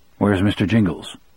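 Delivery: plain reading voice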